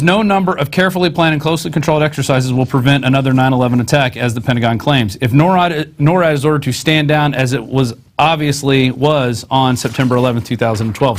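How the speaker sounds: ordinary delivery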